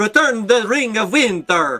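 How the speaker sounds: put-on botched Swedish accent. A game narrator repeats the Frost Giant's demand, bad Swedish accent. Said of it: "that was supposed to be S- Swedish?".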